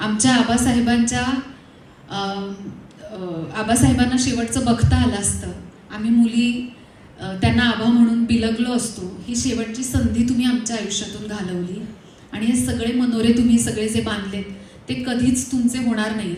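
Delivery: normal talking voice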